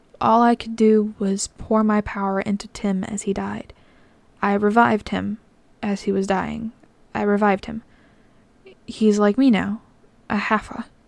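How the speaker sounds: ordinary delivery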